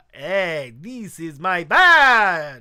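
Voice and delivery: very loud, slow, booming vampire accent, badge drawn out. Character showing off a badge as acting practice: Dracula accent. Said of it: "Do a Dracula accent".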